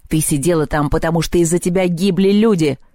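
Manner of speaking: growling, snarling voice. In a quarrel, he growls his accusation back at her. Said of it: "рыкнул Перун".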